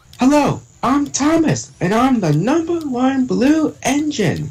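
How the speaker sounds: pitched very high, like a toy train. Describing an easy character to voice, then demonstrating it: Thomas the Tank Engine voice. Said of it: "it's like this voice like".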